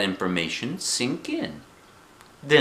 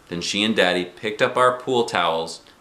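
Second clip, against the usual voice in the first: ordinary delivery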